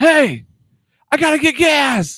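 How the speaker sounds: very high, drawn-out, far-carrying yell. Retelling calling out to a woman who was far away: retelling a yell. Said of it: "You yelled at her?".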